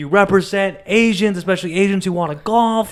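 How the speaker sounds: high, mock, cheering fan scream. Retelling cheering for a golfer at a tournament: retelling own screaming. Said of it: "And so I start screaming".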